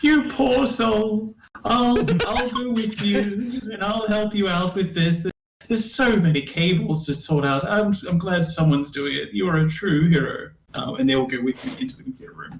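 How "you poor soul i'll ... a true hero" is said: fresh put-on kindly improvised character voice. Voicing a sympathetic character who offers to help with cables: new put-on NPC voice. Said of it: "I forgot the voice that I did. I'm gonna do something new".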